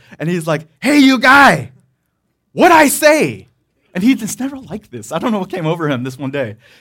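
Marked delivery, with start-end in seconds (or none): 0.8-3.5 furious, very loud, slow angry yell. Retelling a man angry that they weren't sitting down: imitating an angry yell. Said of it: "His voice gets louder".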